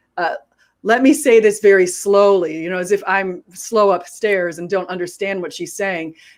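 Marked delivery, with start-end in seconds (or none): none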